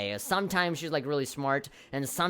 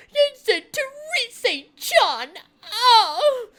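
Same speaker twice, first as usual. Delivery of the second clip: very high, loud, slow annoying voice, "oh" drawn out; 9 dB louder than usual. Mocking a game character's irritating way of talking: mocking Teddy's irritating way of talking. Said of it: "You went back to your good old irritating, annoying self with that way that you talk".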